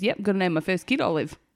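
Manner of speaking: usual speaking voice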